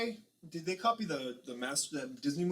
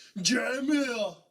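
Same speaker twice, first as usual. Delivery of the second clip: put-on Austrian accent, higher and louder; 9 semitones higher, 8 dB louder than usual. Imitating a mispronunciation from the movie: Arnold Schwarzenegger impression. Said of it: "He's like".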